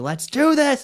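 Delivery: high, loud mock battle scream, belted. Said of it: "screams and he's like".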